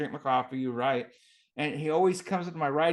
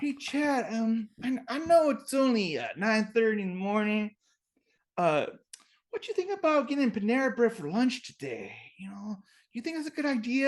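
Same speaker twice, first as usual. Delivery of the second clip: put-on kid voice, much higher, slower; 8 semitones higher than usual. Retelling a boy asking him about getting lunch, imitating how the kid talks. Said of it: "And that's how he talks".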